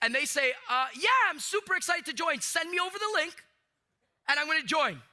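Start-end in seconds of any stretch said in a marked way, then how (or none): 1.0-4.9 put-on overly eager, gushing, pitched-up enthusiasm. Acting out a prospect agreeing to join the business, imitating an overly excited prospect. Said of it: "Overly excited".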